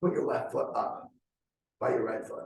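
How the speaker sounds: whispered aside. Retelling words once said to a friend mid-conversation: retelling a whisper. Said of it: "I just whispered it to him".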